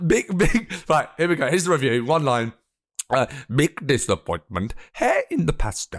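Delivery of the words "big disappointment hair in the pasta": put-on Norwegian accent. Speaker reads out a one-line review, mock norwegian accent. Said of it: "so this is how they talk".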